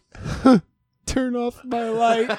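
put-on chuckle. Retelling what was said in bed after being told to turn off the light: imitating own little laugh while talking. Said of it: "I give just this little laugh".

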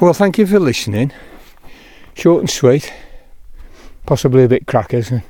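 winded, out of breath. Speaker signing off while climbing uphill through snow, out of breath. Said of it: "apologising for being out of breath".

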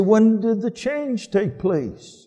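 mock derisive tone, pitched way up. Speaker quoting critics who attack the Scriptures: mocking quote of skeptics.

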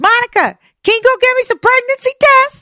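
put-on, very high screaming call. Retelling how she called out to the girl, retelling a scream. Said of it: "she's like screaming it".

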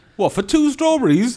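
put-on very high-pitched, loud Cardiff Welsh accent. Speaker retells what a woman at the greengrocer's said, in a Cardiff accent. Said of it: "some woman with a Cardiff accent".

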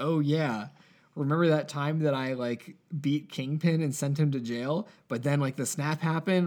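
normal talking voice

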